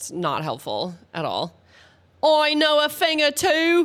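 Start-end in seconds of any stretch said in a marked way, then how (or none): 2.2-3.9 fake British accent, pitched up. Doing a bit for the late-night audience, put-on British accent. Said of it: "don't mean I I can't do this accent".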